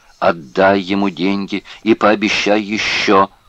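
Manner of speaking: ordinary delivery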